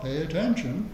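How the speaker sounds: usual speaking voice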